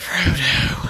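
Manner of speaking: overly big, dramatic delivery. Reviewing a film, mocking the love interest's speech: dramatic Liv Tyler voice. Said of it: "hearing her talk like this".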